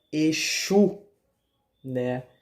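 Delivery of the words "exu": Exu, stress on the final u. Explaining how the orixá's name is said: stress on final U of Exu. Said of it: "tem um acento no U, onde dá ênfase ao U".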